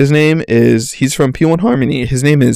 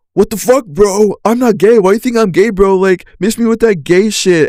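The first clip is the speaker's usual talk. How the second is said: defensive, angry delivery with raised pitch; 7 semitones higher than usual. Acting out how a guy might react to being hit on: imitating an angry guy. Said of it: "the guy become angry".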